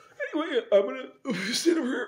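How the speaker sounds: very high, squirming, ill-at-ease, awkward voice. Retelling what a man said after everyone left, imitating an awkward, uncomfortable voice. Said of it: "he had like had that voice about him".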